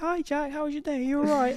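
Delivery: very high, cheery, chirpy voice.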